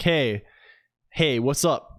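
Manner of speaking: slow, put-on cool-guy voice. Greeting Luigi 401 while pretending to be a cool guy, cool guy voice. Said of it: "I have to be a cool guy".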